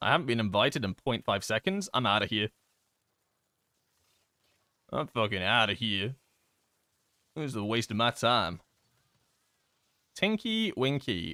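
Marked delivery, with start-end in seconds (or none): 0.0-8.6 impatient rant with a no-patience, giving-up tone. Mocking players with no patience who leave a group: mocking an impatient player. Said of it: "People have no patience".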